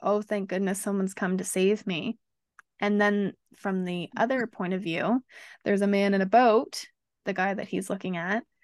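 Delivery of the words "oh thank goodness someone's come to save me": normal talking voice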